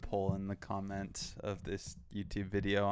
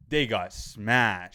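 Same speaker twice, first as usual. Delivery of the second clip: put-on loud, unhushed voice, much louder; 10 dB louder than usual. Telling a theater story, quoting what he blurted out: retelling a very loud remark. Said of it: "just in the most audible voice I've ever heard".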